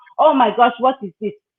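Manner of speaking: mock talking while laughing. Retelling how a friend laughed at the long walks: imitating a friend laughing while talking. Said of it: "she'll be laughing at me and saying".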